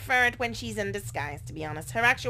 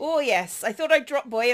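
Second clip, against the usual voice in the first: loud, rough attempted Yorkshire accent; 3 semitones higher, 6 dB louder than usual. Asked for a Yorkshire accent, giving an attempted Yorkshire accent. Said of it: "give me a Yorkshire accent".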